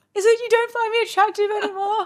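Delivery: very high, tearful pleading voice. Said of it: "I'd be like".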